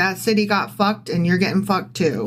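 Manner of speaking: ordinary talk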